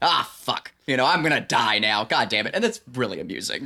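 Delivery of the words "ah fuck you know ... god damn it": put-on displeased, curmudgeonly old man grumble. Imitating a curmudgeonly old man in a film who is more displeased than scared about dying: imitating a displeased curmudgeonly old man. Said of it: "he's more just displeased than he is".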